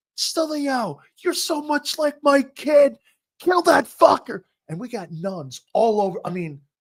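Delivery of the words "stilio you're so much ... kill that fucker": high-pitched, shrill, loud screeching scream. Retelling how a football mom cheered from the stands: imitating someone screaming. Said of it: "she would just start screaming".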